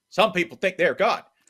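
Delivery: enthusiastic, eager put-on voice, high and loud. Quoting a response to Saban in an enthusiastic Jimbo Fisher voice. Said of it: "in a admittedly mediocre but enthusiastic Jimbo Fisher voice".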